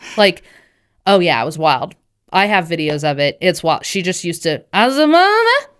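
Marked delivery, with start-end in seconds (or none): 4.7-5.6 put-on very high, sassy, babbling toddler voice full of attitude. Retelling how a baby mumbled with full attitude: imitating Lindsay's sassy baby mumbling. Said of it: "with, like, full attitude, just mumbling things".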